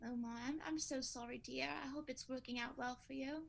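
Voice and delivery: proper-sounding British voice. Playing a pen pal meeting face to face in a skit: proper British accent. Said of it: "you sound so proper".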